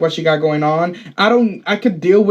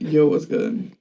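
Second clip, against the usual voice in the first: put-on masculine voice, lower, quieter; 3 semitones lower, 5 dB quieter than usual. While friends trade voices, the speaker uses a put-on masculine voice. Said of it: "Y'all are both masculine sissies".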